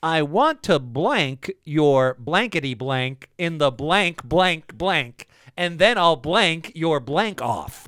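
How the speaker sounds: loud, slow news announcer voice.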